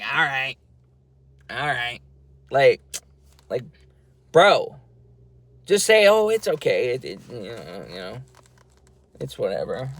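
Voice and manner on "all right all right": put-on dopey, stupid-sounding, sarcastic, snarky voice. Retelling walking off and repeating a reply to her, in a stupid voice. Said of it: "in this stupid voice".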